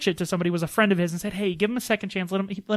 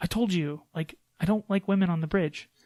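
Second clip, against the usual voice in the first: put-on angry voice; 3 dB quieter than usual. Retelling how the captain scolds the yeoman: imitating Captain Pike angry. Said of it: "he gets all mad at her".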